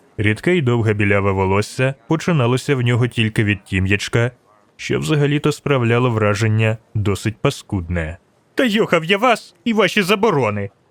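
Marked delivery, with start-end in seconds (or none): 8.6-10.7 high-pitched shout. A young man calls out from a safe distance, shouted. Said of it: "крикнув юнак із безпечної відстані".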